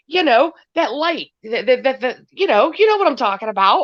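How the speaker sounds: high, exasperated, stammering scream. Retelling frustration during a live, imitating own screaming at phone. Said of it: "screaming at my phone".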